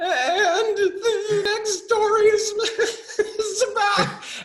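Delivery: very high, slow, squeaky reading with stifled giggles. Retelling reading a story on camera while trying not to laugh: imitating own suppressed giggling. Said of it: "it sounded like Mickey Mouse on helium".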